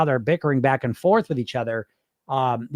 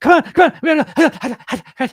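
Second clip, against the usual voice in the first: frantic screech, much higher and louder; 12 semitones higher, 6 dB louder than usual. Describing listeners' inner voice, the speaker acts out how it talks: frantic screeching. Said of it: "You're talking in your head like you're just screeching".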